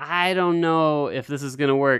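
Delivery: plain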